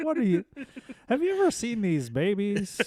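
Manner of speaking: very high, squeaky, swooping, badly done comic voice. Joking about babies, doing a worst Seinfeld imitation. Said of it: "That's my worst Seinfeld imitation".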